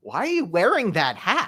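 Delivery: loud, high voice with swooping pitch. Retelling what was said about the hat: Matt Zimmerman impression. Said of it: "that's my Matt Zimmerman impression".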